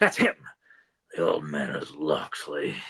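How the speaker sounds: rough, gravel-laden delivery. Imagining a movie scene with the sheriff talking: Michael Wincott gravelly voice. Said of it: "with that gravelly voice of his".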